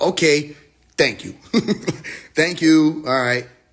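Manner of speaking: slow, pointed, sarcastic brush-off tone. Retelling what Pop said on a call: imitating someone being sarcastic. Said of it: "He was being sarcastic".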